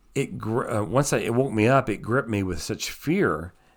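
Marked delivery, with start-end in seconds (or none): none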